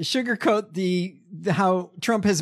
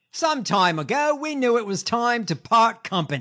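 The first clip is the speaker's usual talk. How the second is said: higher, bad Australian accent. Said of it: "In my shitty Australian accent".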